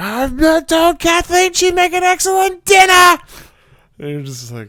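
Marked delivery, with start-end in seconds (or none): 0.0-3.2 put-on, very high, loud, enraged screaming. Retelling how a movie character yells as he gets angry: imitating a character screaming. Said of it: "as he's screaming".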